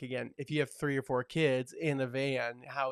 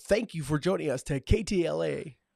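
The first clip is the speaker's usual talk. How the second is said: radio DJ voice, louder; 3 semitones higher, 5 dB louder than usual. Saying they always wanted to try being a radio jockey: radio DJ voice. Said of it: "like a radio jockey".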